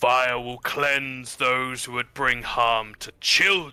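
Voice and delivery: furious, angry bellowed shout. Narrator voices a figure stepping out into the corridor, deep, angry shout. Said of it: "a deep, angry voice just shouts out and says".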